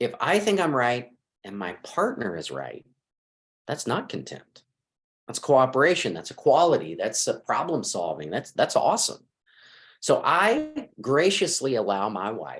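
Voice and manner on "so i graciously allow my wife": slow, swooping, dripping, very heavy sarcasm. Speaker talking about himself and his wife, very sarcastic. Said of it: "I'm saying this very sarcastically".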